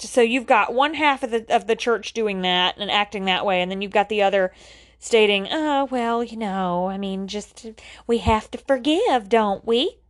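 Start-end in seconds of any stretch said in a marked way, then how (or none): 5.5-9.9 lady character voice. Speaker voicing the forgiving half of the church, church lady voice. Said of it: "I'm sounding like the church lady".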